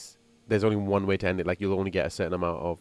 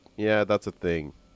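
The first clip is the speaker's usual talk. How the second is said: mock bored narrator delivery. Reacting to a trailer narrator, imitating a bored narrator. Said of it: "it sounds so bored".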